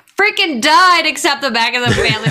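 sudden high-pitched yelled outburst. Reacting to a question from the host, yelling. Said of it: "I'm just yelling at your question".

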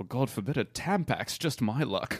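acted upper-class British accent. Acting out the leaked phone call tapes: Prince Charles British accent. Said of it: "I'll be Charles".

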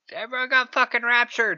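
high, ranting, yelled outburst. Retelling how a character yells at the pastor: imitating someone yelling. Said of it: "she just starts yelling at the pastor".

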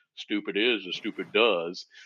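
slow, soft, quiet Southern drawl. Retelling a man answering an angry employee, in Forrest Gump accent. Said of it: "in his best Forrest Gump accent".

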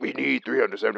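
mock-menacing, aggressive, raspy put-on voice. Repeating the ransom demand on the phone, in a put-on raspy aggressive kidnapper voice. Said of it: "what's wrong with your voice?".

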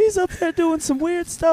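very high-pitched, strained-up voice. Reacting to a story about the open mic guy, imitating a very high-pitched voice. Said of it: "he had a very high pitched voice".

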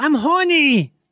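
talking-dog voice. Telling a family joke about the dog, speak in the family dog's voice. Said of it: "I do my dog voice so much".

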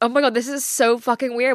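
ordinary delivery

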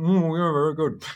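high, muffled mumble through a full mouth. Describing diners answering the waiter, mimicking mumbling through a full mouth. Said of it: "mumbles through a full mouth going".

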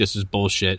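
ordinary delivery

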